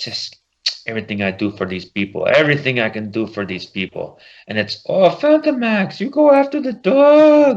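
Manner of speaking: bad, lousy put-on French accent. Retelling a scene with Lockjaw asleep in an alley, bad French accent as Phantom Max. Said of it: "I was probably doing as bad a French accent".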